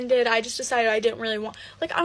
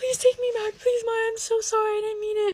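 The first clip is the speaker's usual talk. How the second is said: mock very high, tearful, crying, pleading voice; 10 semitones higher than usual. Retelling how he knelt and pleaded with her, imitating someone crying. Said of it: "he's like crying to me".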